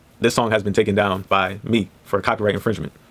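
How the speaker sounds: ordinary talk, nothing marked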